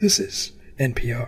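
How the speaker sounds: gentle, soft radio announcer voice. Imitating how everyone on NPR talks: NPR radio voice. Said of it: "on NPR, they all talk like this".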